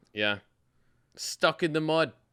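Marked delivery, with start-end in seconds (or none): 1.1-2.0 terrible put-on Irish accent, pitched up. Quoting a phrase while discussing a game: terrible Conor McGregor Irish accent. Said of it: "A terrible fucking Irish accent".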